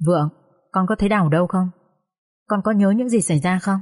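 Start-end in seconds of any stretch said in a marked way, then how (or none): none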